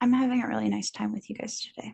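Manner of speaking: sad-sounding, with sadness running under it. Telling the others about having a nice time with them: sounding sad. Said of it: "Why do you sound sad about that?".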